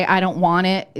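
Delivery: normal talking voice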